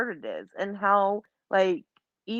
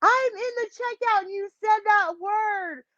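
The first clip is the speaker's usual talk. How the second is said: put-on, very high-pitched, scolding, yelled outburst; 13 semitones higher than usual. Retelling how the sister yelled from the checkout: imitating sister yelling. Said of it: "my sister yelled at me".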